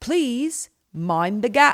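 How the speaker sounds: put-on thick Irish accent. Retelling the train's intercom announcement, in a thick Irish accent. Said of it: "this thick Irish accent came out over the intercom".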